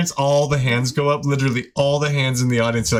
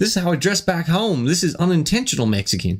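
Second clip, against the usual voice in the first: put-on Australian accent on every word; 3 semitones higher than usual. Retelling how a guy from Australia answered when asked where he's from; Australian accent. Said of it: "It's like in the Australian accent".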